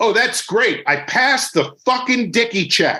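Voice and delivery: put-on loud outburst. Retelling his reply to a man who told him he could go: retelling a loud remark. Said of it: "I said to him in a loud voice".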